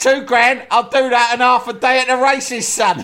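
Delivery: very high-pitched, offhand, dismissive brush-off. Retelling a football manager's radio call: imitating Harry Redknapp. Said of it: "And Harry Redknapp's gone".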